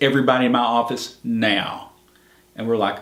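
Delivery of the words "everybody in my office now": plain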